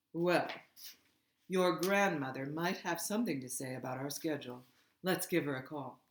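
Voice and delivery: ordinary delivery, nothing marked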